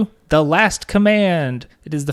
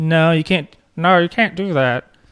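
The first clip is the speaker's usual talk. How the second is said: badly done put-on filmmaker voice. Imitating a filmmaker rejecting the Grey Jedi idea: bad George Lucas impression. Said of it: "it's a really bad George Lucas".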